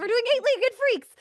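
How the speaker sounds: rattled off very fast in a very high voice. Announcing this week's movie, saying it really fast. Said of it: "I'm going to say it really fast".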